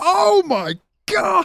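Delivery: high, slow, stunned, disbelieving gasp. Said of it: "I was just like".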